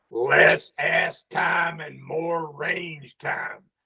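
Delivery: rough gravelly voice, slow, deliberate and drawn out. Retelling an attendee's feedback at his writer seminar, in Walt Rauch's gravelly voice. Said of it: "in that gravelly voice of his".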